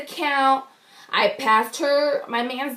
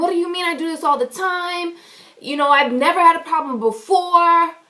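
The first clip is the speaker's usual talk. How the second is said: high-pitched, angry yelling; 6 semitones higher, 4 dB louder than usual. Speaker retells yelling at a boy who upset them: retelling an angry yell. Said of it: "so I'm yelling".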